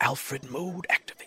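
muttered under breath. Voicing a character who hands over a sandwich, muttering to himself. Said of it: "he mutters to himself".

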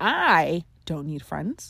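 slow, whispered stress on the word I. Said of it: "if you emphasize I".

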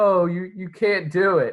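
fake laughter, very slow. Retelling a story scene with a horse, imitating Atreyu laughing while talking. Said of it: "he's like laughing at the horse".

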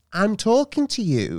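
very high, slow, vicious teacherly scolding. Imitating a primary school teacher talking to kids: imitating a primary school teacher. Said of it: "me doing an impression of my sister".

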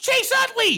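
sudden, wild, high-pitched yelp.

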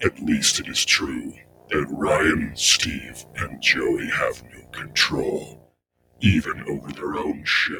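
sinister, evil, villainous voice. Podcast host opens the Berserk Podcast, using an evil voice.

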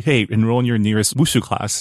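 ordinary talk

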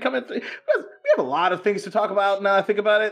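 laughing through the words.

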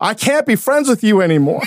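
put-on high scream.

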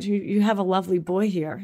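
put-on little British old man accent, elderly gentleman. Recounting what Alex's grandfather said to Jordan, little British old man accent. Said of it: "and a little British old man accent".

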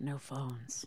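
calm, low, gravelly, very quiet murmur. Imagining how Kiefer would say it: Kiefer impression, calm and gravelly. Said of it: "his calm, gravelly tenor".

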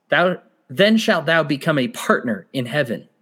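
normal talking voice

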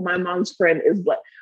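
ordinary delivery

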